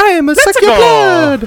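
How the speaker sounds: very high, very loud, shouted cartoon vampire voice. Asked to pose the questions as Mario Vampire, in a Mario vampire voice. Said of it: "Now I want to hear Mario Vampire".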